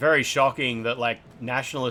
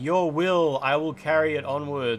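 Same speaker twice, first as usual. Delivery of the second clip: put-on slow, synthetic-sounding American accent; 4 semitones higher than usual. Describing a game's changed boss-fight ending, quoting the character in AI-generated American accent. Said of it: "with an A I-generated American accent".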